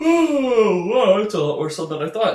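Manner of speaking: talking through a loud yawn, drawn-out oh. Explaining a game's levels to viewers, yawning while talking. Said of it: "sorry for yawning".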